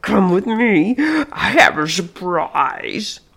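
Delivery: slow, strained, struggling speech as if throat blocked. The intruder speaks to the woman who has just woken: speaking with great difficulty. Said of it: "He was wearing her spring party dress and the fancy blue lady's hat that she kept on the coat rack in her room. It had been her mother's. The intruder smiled and revealed several missing teeth and an enormous mouth. ... He seemed to be speaking with great difficulty, as though he had something lodge".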